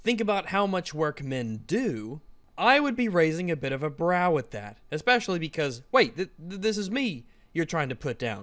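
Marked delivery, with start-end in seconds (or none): 0.1-2.2 dry, ironic, tongue-in-cheek sarcastic delivery. Quoting a line from a script: retelling a sarcastic line.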